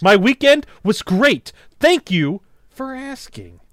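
pushy rude tone, very high, very loud, slow. Imitating a friend's reply to being asked about the weekend: imitating an aggressive reply.

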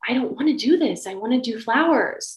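acted tearful crying. Retelling the talk with mom after getting the job, retelling past self crying. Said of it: "why are you crying?".

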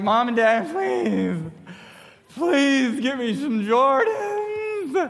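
slow, drawn-out pleading, words stretched long. The speaker acts out pleading with mom and dad, acting out begging. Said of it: "like literally begging on my hands and knees".

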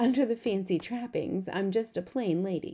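usual speaking voice

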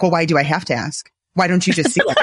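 acted snarky tone. Retelling own past words: imitating own snarky tone. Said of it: "this is just me being snarky".

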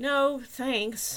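barely hidden sarcasm. The narrator declines further help from the maintenance department: sarcasm held back. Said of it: "to keep the sarcasm out of my voice".

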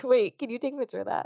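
high, rushed words through helpless laughter. Reacting to seeing a face reflected on a watch: laughing while talking. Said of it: "I can't stop laughing".

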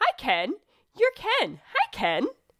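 relentless, chirpy doll voice.

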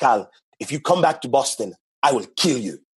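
put-on Haitian-accented speech. Retelling what his mother told him, imitating mom's Haitian accent. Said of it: "So she got a crazy accent".

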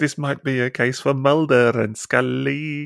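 put-on Welsh accent with drawn-out words. Recalling the voice she hears whenever Road Rage comes up, Welsh accent impression. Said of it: "Was that your Welsh accent then?".

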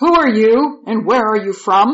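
put-on rough voice. Narrator reads him questioning the visitors through an interpreter, voice made rough. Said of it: "he made his voice sound rough".

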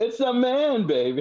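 very high comedy spy voice, spy-spoof style. Responding to another speaker's story, speaker does an Austin Powers voice. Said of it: "It's like with the Austin Powers voice".

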